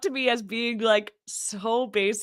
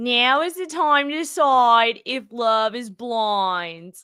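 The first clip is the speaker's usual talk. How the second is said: put-on Philadelphia accent, stretching the word blind. Retrying the show intro for a co-host, now in a Philly accent. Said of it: "I want to see if I can do it with the like Philly accent".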